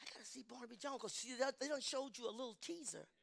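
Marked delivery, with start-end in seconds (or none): 0.0-1.0 acted-out private whisper, much quieter. Speaker recounts a thought kept from everyone, acting out whispering to self. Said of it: "I'm whispering to myself".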